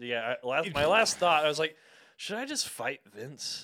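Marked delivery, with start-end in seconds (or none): 2.2-3.7 mock drunken slurred speech, quieter. Retelling own last thought from a drunken night: imitating drunken slurring. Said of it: "very, very drunkenly".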